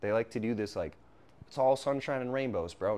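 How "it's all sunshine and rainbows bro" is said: ordinary delivery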